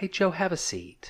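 soft, whispered, proper-sounding voice. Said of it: "let me do it in your proper voice".

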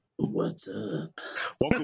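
put-on voice of a legendary cryptid creature. Introduced as everyone's favorite cryptid, a new cast member greets the show in a cryptid creature voice. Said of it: "Is that a good cryptid voice?".

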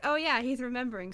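ordinary delivery

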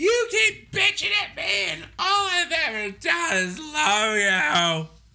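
very high, shrill, loud screaming. Speaker retells a man screaming when she calls back, retelling a man screaming. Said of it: "starts screaming".

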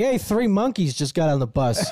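ordinary delivery

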